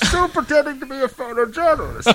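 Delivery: feeble, very high-pitched put-on voice. On a podcast, a co-host slips in a line in a feeble Bane voice. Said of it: "your feeble attempt at inserting a Bane voice".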